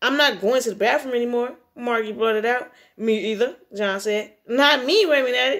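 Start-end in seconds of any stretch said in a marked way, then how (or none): none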